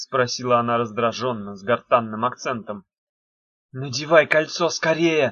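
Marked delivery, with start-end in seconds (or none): 3.7-5.3 urgent, hissed delivery. Narrator reads a character's line to another character, hissed. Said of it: "зашипела Дафна на Мефа".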